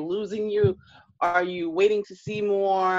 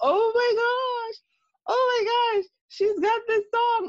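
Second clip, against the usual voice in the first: mock, very high, stretched-out squealing scream. Recalling standing by the juice in the supermarket, the speaker acts out retelling own screaming. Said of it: "I'm like screaming like".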